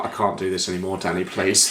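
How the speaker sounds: put-on exhausted voice. Imagining the film extras pleading to the director: imitating exhausted film extras. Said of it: "the extras just being like".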